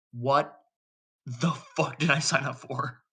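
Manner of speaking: speaking through teeth clenched in pain. Playing a character in agony with eyes screwed shut: through gritted teeth. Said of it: "his teeth are just gritted to the extreme".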